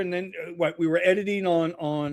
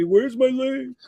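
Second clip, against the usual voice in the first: mock high-pitched, demanding hollered yell; 7 semitones higher than usual. Retelling how a guest yells about the link: imitating Steve yelling. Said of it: "he'll start yelling at me".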